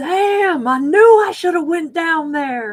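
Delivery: put-on loud drunken holler, very high. Retelling a flooded dance floor, imitating a voice from the crowd: imitating a drunken yell. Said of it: "this huge drunken voice".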